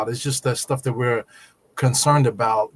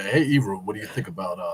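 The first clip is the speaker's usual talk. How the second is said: put-on sexy voice, much lower pitched; 4 semitones lower, 3 dB quieter than usual. Mimicking how the host speaks with the sexy voice on, imitating the sexy voice. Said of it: "So the sexy voice is on".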